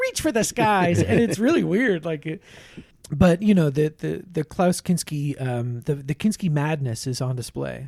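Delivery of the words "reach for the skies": higher whiny put-on voice. Retelling a movie scene, imitating a character's dubbed line: whiny Klaus Kinski voice. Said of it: "he's kinda whiny. He's like".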